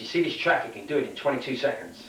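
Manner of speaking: ordinary talk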